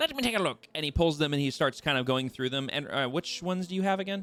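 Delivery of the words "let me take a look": squeaky, very high little gnome voice. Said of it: "He says".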